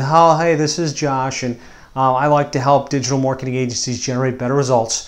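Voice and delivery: soft, dull, monotone, listless, low-energy delivery.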